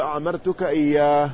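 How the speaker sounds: ordinary talk, nothing marked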